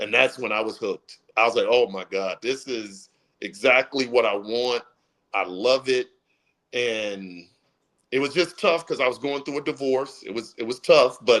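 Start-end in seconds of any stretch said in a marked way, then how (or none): none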